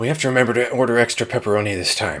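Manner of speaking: mock delivery on a giant exhale. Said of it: "finishing every line on a giant exhale".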